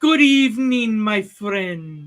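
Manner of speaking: put-on mashup of Scottish, Italian and French accents. Host greeting guest Scotty as he comes in; fake Scottish-Italian-French accent. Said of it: "With my fake Scottish, Italian accent, French accent, whatever this is".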